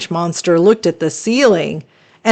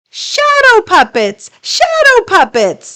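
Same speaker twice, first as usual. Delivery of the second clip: squeaky monster voice, very high and swooping. Narrator reading a story, the orange monster answers a question, squeaky monster voice. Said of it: "she squeaked again".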